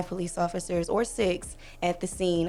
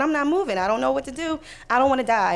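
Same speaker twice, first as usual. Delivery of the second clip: acted hysterical crying, higher pitch; 6 semitones higher, 4 dB louder than usual. Retelling refusing a dispatcher's order to get out of the car: reenacting hysterical crying. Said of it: "So now I'm crying".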